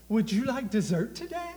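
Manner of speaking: very high, sugary, sweet-talking waitress voice. Telling about eating at a restaurant, acting out the waitress: imitating a sweet-talking waitress. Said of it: "she talks real sweet".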